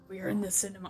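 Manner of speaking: deep monster voice. Trying out the Venom voice while watching the film. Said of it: "I can't do the Venom voice".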